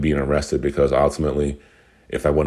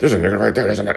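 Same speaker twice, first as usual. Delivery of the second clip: put-on, high, raw, hoarse, rattled-off screaming; 6 semitones higher than usual. Retelling how a homeless man screamed at passers-by, acting out his scream. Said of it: "He's screaming it".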